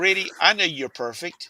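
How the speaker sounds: dry sarcastic tone, meaning the opposite. Retelling what dad would say during heated discussions: imitating a sarcastic remark.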